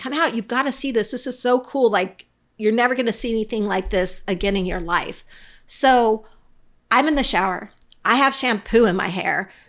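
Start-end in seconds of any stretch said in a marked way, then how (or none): 0.0-5.2 mock eager, delighted, affectionate, excited calling. Retelling Rob yelling from the deck to her in the shower, imitating Rob yelling.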